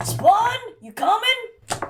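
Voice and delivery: very high call projected across a big space. Calling a companion from far across the room: calling out loudly. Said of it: "call all the way out to the, like, kind of the rafters".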